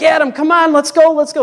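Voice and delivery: very high, hollered yell, acted out. Retelling how the boss urged them on right after a fall, retelling the boss's yell. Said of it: "my boss is yelling like".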